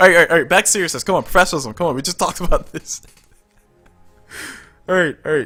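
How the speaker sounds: talking while cracking up, laughing through words. Trying to get back to seriousness after a joke, laughing while talking. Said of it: "If I can stop laughing".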